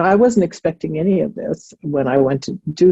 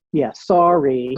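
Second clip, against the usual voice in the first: mock insincere, half-hearted tone; 2 semitones lower than usual. Acting out a kid's grudging apology to the teacher: imitating an insincere apology. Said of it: "not genuine at all".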